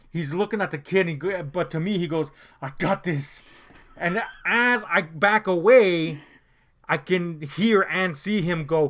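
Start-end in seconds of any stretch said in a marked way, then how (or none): 2.6-3.4 put-on speech through gritted teeth, quieter. Retelling a father's curt reply, imitating speech through clenched teeth. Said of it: "teeth clenched".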